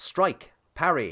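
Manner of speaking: put-on English accent, fantasy character style. Calling out a move in the game, the speaker uses the English accent from Baldur's Gate 3. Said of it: "I'm saying that in the um, the the English accent from the guy in Baldur's Gate three".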